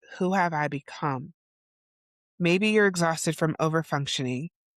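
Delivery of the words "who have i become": usual speaking voice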